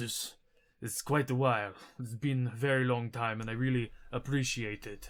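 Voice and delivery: put-on giant accent and character voice. Retelling what a giant says, in the giant's accent. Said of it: "Wouldn't he not have an accent anymore?".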